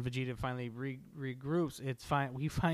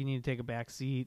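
plain

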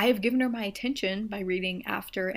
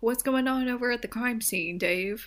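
tv newscaster voice with set pause; 3 semitones higher than usual. Imitating a newscaster asking a reporter: imitating a newscaster. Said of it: "news, uh, casters".

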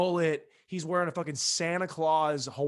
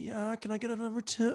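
put-on seductive bedroom voice; 7 semitones higher, 4 dB quieter than usual. Joking that nobody orders food this way: put-on sex voice. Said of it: "You don't order food like that".

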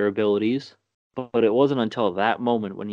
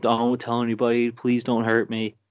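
imitated voice of a pleading child. Retelling a film scene where a kid pleads: imitating a pleading child. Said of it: "pleading with them".

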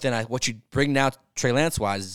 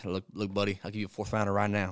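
put-on Southern accent, quieter; 6 dB quieter than usual. Quoting someone's offer to a buddy, in a Southern accent. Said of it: "That's Southern".

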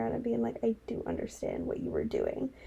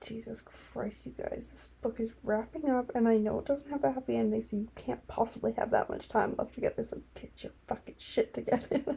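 usual speaking voice

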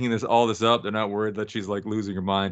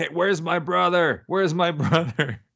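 mock high-pitched yelling; 7 semitones higher than usual. Recapping a scene, the speaker acts out Donna confronting Natalie: Donna yelling, retold. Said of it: "just starts kind of yelling at her".

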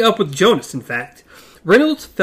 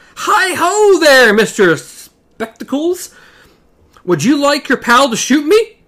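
friendly, good-humored calling voice, raised and pitched up; 6 semitones higher, 6 dB louder than usual. Reading a character calling out to a man about his friend; raised good-humored calling voice. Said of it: "raised his voice in a good-humored trail".

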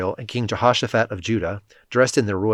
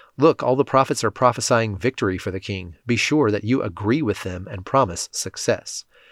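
ordinary delivery

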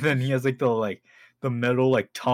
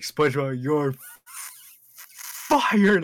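forceful, full-force delivery; 3 semitones higher than usual. Retelling a cartoon scene as Mister Krabs: saying it forcefully. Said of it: "he has to say it with the most force ever".

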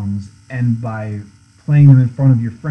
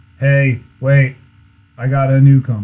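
put-on deadpan, much slower. Retelling what he says to the speaker with a look, imitating someone's deadpan. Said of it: "he'll deadpan look at me sometime and be like".

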